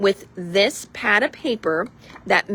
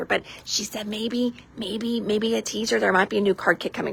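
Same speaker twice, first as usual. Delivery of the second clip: secretive, hushed half-whisper with no voice; 4 dB quieter than usual. Though nobody else is in the room, the speaker is half-whispering. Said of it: "I still don't know why I'm".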